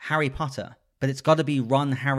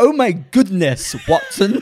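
ridiculous fake cheesy British accent, higher and louder; 6 semitones higher, 8 dB louder than usual. Retelling a spoof movie trailer: imitating a cheesy British accent. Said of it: "the most ridiculous, cheesy British accents".

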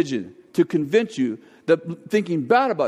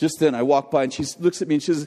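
plain

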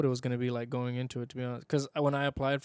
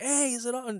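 very high-pitched yelling; 11 semitones higher than usual. Retelling running back and calling out a question, retelling own yelling. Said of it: "I'm yelling".

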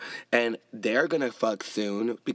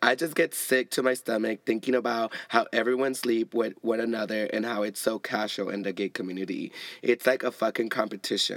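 normal talking voice

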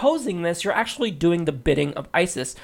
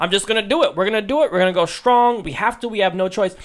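put-on small child voice; 3 semitones higher, 4 dB louder than usual. Mocking a politician's answer on policy: imitating Donald Trump like a six-year-old. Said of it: "he sounds like a six-year-old".

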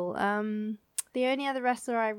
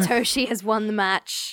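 ordinary talk, nothing marked

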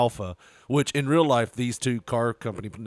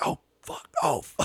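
soft, hushed swearing under the breath; 5 semitones higher than usual. Retelling a coworker's panicked reaction on a phone call: imitating someone cursing quietly. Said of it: "he's cursing, but really quietly".

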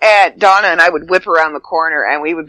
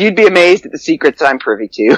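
ordinary talk

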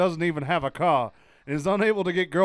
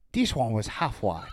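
put-on Chinese accent, lower pitch; 6 semitones lower, 3 dB quieter than usual. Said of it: "switch into a Chinese accent right now".

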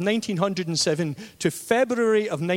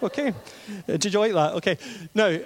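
normal talking voice

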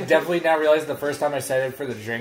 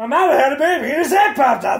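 put-on strained comedian voice, higher and louder; 12 semitones higher, 6 dB louder than usual. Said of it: "Bobcat Goldthwait was what that was bordering on".

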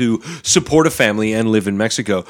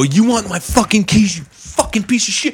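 mock very high-pitched scream, rising in pitch; 9 semitones higher than usual. Retelling a confrontation with a guy, re-enacting screaming at him. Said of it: "I start screaming at the guy".

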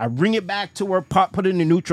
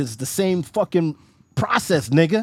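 ordinary talk

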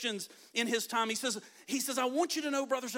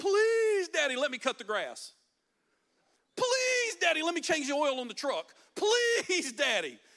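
put-on high, sing-song, repeated pleading in a child's voice; 6 semitones higher, 7 dB louder than usual. Telling how a boy begged his dad to let him work, imitating a kid begging. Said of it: "He would beg his parents to let him work".

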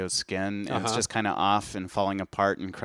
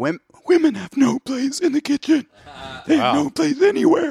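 very high, very loud speech on inhaled breath; 10 dB louder than usual. Mocking an anti-women man's reaction, the speaker is imitating talking inward. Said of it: "He talks inward".

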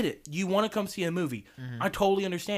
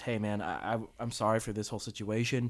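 put-on whisper, lower and quieter; 9 semitones lower, 6 dB quieter than usual. Retelling what a manager said to a moviegoer: imitating a whisper. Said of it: "he whispers to the guy".

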